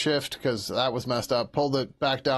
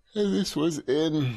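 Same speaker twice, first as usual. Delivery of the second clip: words spoken through a yawn; 3 semitones higher than usual. Talking through which code file this was, getting tired: yawning. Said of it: "Sorry, I'm yawning".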